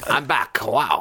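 put-on French accent. Mocking a footballer who talks all the time: Giroud impression. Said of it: "I'm gonna keep doing my Giroud impression".

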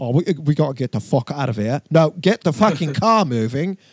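put-on natural, plain speaking voice, no accent. Retelling an escape into an ambulance: imitating Sacha Baron Cohen's real voice. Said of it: "you can hear him speaking in his real voice".

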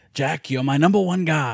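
put-on gruff old man's voice. Retelling a film line done as a Jack Palance impression. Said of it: "he was doing an impression of him".

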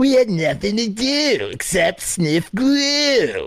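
slow, high, drawling cadence. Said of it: "so for Dee Dee, it's always".

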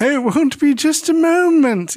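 put-on British English accent. Speaker acts out a show character trying to sound like an adult, put-on english accent. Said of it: "So she puts on an English accent".

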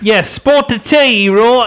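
high, slow Cockney English accent.

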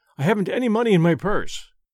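ordinary talk

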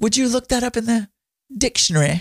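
put-on British accent. Imitating a southern grandmother saying words with a british accent. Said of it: "she would say it like a British accent".

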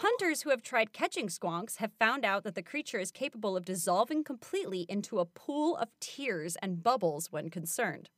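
ordinary talk

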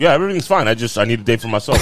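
ordinary delivery

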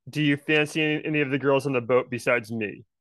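ordinary talk

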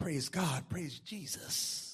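slow, breathy, whispered, soft-spoken murmur. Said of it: "I don't care how soft her voice is".

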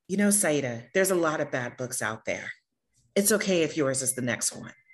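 sugary, extra-sweet, heavy Southern drawl. A speaker retells what a woman said to them from her car, imitating a sweet Southern voice. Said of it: "said in the sweetest, most Southern voice ever".

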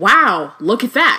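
taunting tone. Reading a scene aloud, Harry taunting Narcissa: mocking. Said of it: "Harry looked mockingly all around the shop and said".

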